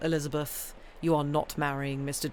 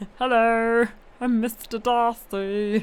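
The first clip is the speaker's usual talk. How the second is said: high, goofy puppet voice, drawn out; 7 semitones higher, 5 dB louder than usual. Playing Mister Darcy in one of their voices: goofy Kermit voice. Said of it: "the goofy one. / You did Kermit Darcy".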